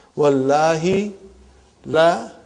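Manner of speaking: slow, deliberate delivery. Explaining the arabic oath to brothers and sisters, said slowly. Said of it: "I'm saying it slowly".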